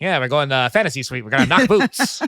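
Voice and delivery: put-on old-Hollywood transatlantic accent. Imagining how he would have said it on the show; transatlantic accent. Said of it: "like the transatlantic accent when he said knocking boots".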